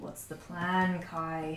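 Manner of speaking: very quiet, deep, low gruff mutter. Storyteller voicing a figure who appears in front of the players: deep gruff voice, under breath. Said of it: "a very deep, gruff voice ... Under his breath".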